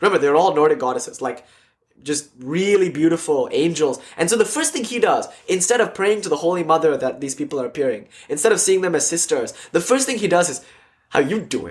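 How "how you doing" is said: mock cocky, cheeky, flirty delivery. Retelling how a man began hitting on a receptionist: imitating a man flirting. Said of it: "first he started hitting on the receptionist".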